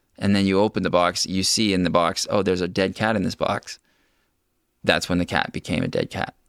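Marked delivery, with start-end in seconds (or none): none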